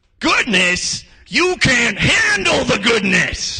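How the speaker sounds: booming, very high, slow, drawn-out shout. Imagining God quoting a film line: Jack Nicholson impression. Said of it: "God doing his best Jack Nicholson impression".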